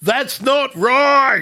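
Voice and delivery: drawn-out put-on shouting.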